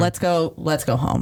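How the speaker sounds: normal talking voice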